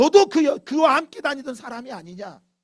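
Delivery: loud, high, accusing woman's shout.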